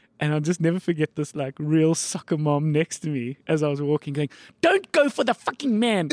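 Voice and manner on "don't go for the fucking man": mock, high-pitched yelling, shouted. Retelling what a mom on the sideline yelled at her son: imitating a mom shouting. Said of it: "shouting at this boy".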